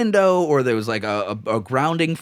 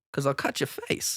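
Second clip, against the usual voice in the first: put-on menacing pimp voice, sometimes quieter; 10 dB quieter than usual. Quoting a pimp from a movie: Christopher Walken impression. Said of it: "my only Christopher Walken impersonation".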